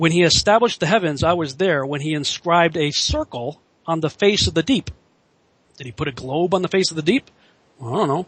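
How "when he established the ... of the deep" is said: plain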